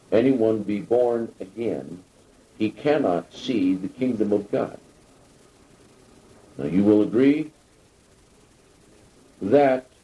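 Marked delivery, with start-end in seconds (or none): none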